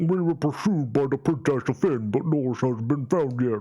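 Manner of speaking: goofy dopey voice. Voicing a game character reporting a missing friend: derpy voice. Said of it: "a derpy voice".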